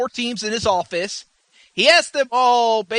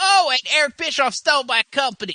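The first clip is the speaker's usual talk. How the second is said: put-on woman's voice, higher; 3 semitones higher than usual. Retelling what a promoter said on a show: imitating Dixie Carter. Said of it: "That's my voice of her".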